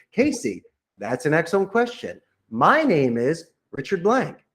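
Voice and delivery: bright, upbeat, positive tone with lifted pitch. Showing how to answer a caller's question: positive tone. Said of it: "Said your name in a positive tone".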